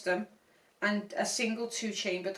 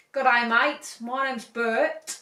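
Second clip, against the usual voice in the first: put-on Australian accent, louder; 3 dB louder than usual. Imagining a shark introducing itself at rehab, in an Australian accent. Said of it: "Do an accent".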